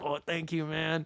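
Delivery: acted gruff, grizzled tone. Retelling a short exchange in a donut shop, imitating its owner: grizzled Danny Trejo voice. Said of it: "kinda had, like, a grizzled voice".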